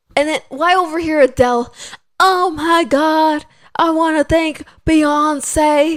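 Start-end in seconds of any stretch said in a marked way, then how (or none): 2.1-5.9 slow, drawn-out put-on English accent. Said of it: "I'm trying to do the English accent".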